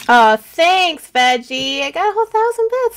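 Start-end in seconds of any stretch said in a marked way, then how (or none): 1.8-3.0 high, fast hyper gush. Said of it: "I'm just hyper".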